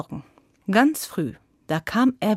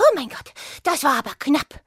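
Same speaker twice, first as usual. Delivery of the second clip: winded, high, puffing and panting between words; 6 semitones higher than usual. The hare reaches home after escaping the dogs, panting. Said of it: "keuchte der Hase".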